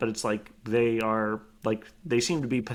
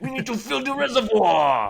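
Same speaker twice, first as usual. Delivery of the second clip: loud, very high-pitched voice; 12 semitones higher, 6 dB louder than usual. Joining an impression contest about seizing the utilities: Arnold Schwarzenegger impression. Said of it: "quick Arnold Schwarzenegger impression contest".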